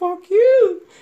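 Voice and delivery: mock-joking teasing. Recalling a reply to colleagues' remarks, retelling a playful 'fuck you'. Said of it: "I'm saying it like jokingly and playfully".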